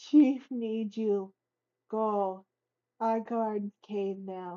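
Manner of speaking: very low, hushed put-on ogre voice. Player voicing an ogre giving an order to another character, ogre voice. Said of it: "gotta get the voice just right".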